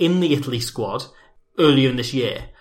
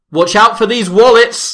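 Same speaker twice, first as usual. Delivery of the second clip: piercing, shrill, high yell at full volume; 9 semitones higher, 9 dB louder than usual. Retelling a teammate's locker room line: imitating Stefano Barbara shouting loudly. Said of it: "shouts very loudly".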